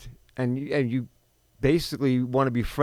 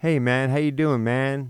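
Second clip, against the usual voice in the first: laid-back, too-casual buddy tone; 3 dB louder than usual. Retelling how a father spoke to a college-age kid: imitating a father's too-casual buddy talk. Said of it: "why are you talking like that?".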